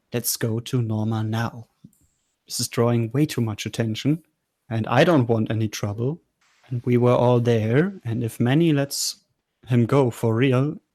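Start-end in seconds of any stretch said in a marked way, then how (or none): 0.1-6.1 very stern, firm, no-nonsense insistent voice. Voicing a character tugging an arm to leave: stern and quiet. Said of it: "very sternly but quietly".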